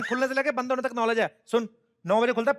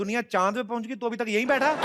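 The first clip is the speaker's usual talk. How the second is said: usual speaking voice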